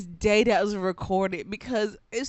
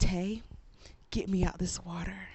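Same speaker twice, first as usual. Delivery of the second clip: put-on stern serious panic, lower and quieter; 3 semitones lower, 7 dB quieter than usual. Retelling how mom panicked in the water: imitating mom's stern, serious panic. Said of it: "it's a stern, serious panic".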